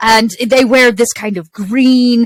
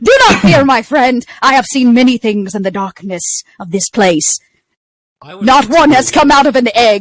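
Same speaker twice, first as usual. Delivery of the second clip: posh, very British voice. Voicing the character Bristlebottom as they speak, in a posh British voice. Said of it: "this kind of a posh British voice".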